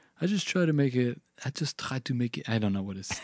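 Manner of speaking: put-on French accent. Quoting a musician's answer about his writing process, in a French accent. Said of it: "You do your French accent".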